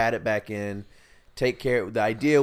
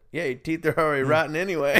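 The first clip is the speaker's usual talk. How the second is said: put-on vague European accent with raised pitch; 6 semitones higher than usual. Retelling what the dentist said about a lost filling: imitating a european accent. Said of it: "he was European of some sort".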